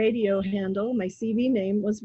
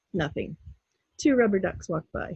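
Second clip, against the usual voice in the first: usual speaking voice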